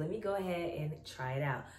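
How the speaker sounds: plain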